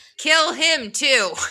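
very high, shrill, shouted voice. Retelling a Bible story, shouting as Jehu.

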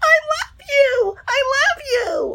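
very high, slow mock scream.

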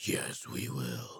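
very quiet, soft, low, deep raspy voice. Quoting a movie line, imitating Tony Todd's very deep raspy voice. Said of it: "he has that very deep raspy voice".

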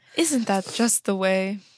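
put-on prim fussy voice. Quoting a character's line back to the other speaker: imitating Niles. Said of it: "You just know everything Niles says".

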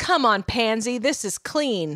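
put-on mobster voice, slow with roller-coaster intonation. Retelling a scene where she urges a man, roller coaster mobster voice. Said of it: "talking like a roller coaster mobster".

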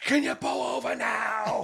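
ragged, rough, very high, shrill screaming. Retelling climbing into the back seat beside a crying baby, retelling a scream. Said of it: "and I started screaming".

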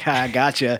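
dry, wry, sarcastic delivery.

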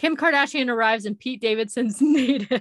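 words read out while laughing, cracking up. Reading a tweet aloud, laughing while talking. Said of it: "I can't even say it without laughing".

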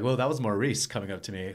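ordinary talk

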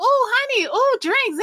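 put-on excited reaction. Retelling getting on the ship and seeing drinks: retelling own excitement. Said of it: "I was so excited".

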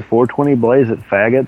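ordinary talk, nothing marked

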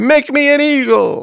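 high, slow, loud screaming.

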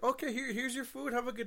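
fake-friendly service voice. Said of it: "for that fake ass".

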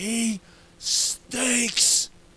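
sudden, high, screamed-out outburst. Retelling what the speaker screamed out during a game, kids in the room, retelling a scream. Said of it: "I screamed out".

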